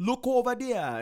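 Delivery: high, loud mock Jamaican accent.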